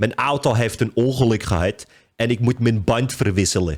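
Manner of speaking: Amsterdam Dutch accent. Showing how people from Amsterdam say the sentence: Amsterdam Dutch accent. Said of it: "How Amsterdam people say it".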